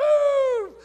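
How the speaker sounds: very loud, high screaming.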